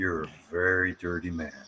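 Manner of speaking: put-on seductive voice. Answering a request to say the line: sexiest voice you can. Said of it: "in the sexiest voice you can".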